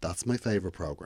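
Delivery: pointed, veiled cautionary tone. Retelling what mum said on hearing the news: imitating a warning tone. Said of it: "it was very much said with a warning tone".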